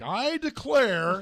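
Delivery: grand, theatrical delivery. Imitating how someone opened dramatically, then paused: imitating Nick's dramatic delivery. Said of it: "Nick was all dramatic at the beginning".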